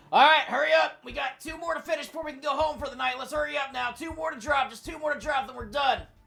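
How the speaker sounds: echoing, far-off shout, very high, very loud. Voicing a faraway worker the players hear: distant yelling voice. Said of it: "you hear what sounds like yelling".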